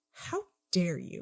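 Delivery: indignant, affronted, taken-aback outburst. Voicing an insulted character who then storms off: taken aback in character. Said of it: "looks taken aback and just says".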